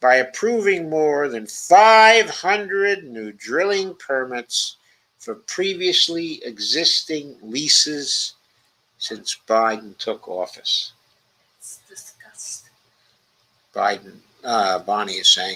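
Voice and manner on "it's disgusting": very soft, barely voiced whisper. Reacting to a report on new drilling permits, whispered. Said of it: "She's whispering it".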